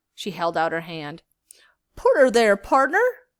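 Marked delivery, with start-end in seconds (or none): 2.0-3.1 put-on hearty old Western cowboy accent, very loud and high. A character heartily holding out her hand in greeting: Buffalo Bill Western accent. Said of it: "She had a great accent, right out of an old Western movie".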